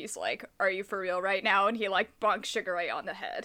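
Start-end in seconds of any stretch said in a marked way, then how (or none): 0.6-1.7 put-on sarcastic delivery. Quoting Yuki's first line in the reboot: sarcastic Yuki line. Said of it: "he says something really sarcastic".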